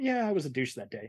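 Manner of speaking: ordinary talk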